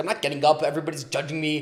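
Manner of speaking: jittery, nervous, anxious voice. Retelling own words when pushed to speak as a teen: imitating nervous self. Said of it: "super nervous".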